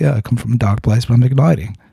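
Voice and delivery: put-on South African accent throughout. Retelling a conversation, the speaker quotes the man's reply: South African accent. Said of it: "That's my South African accent".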